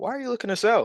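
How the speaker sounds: laid-on-thick curious tone. Showing how he asks sellers why they sell, exaggerated curious tone. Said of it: "I'm like being a little exaggerated".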